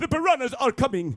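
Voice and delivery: every single word stressed, high and loud. Imitating Christopher Lloyd when filming starts: Christopher Lloyd impression. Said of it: "who always talks like this".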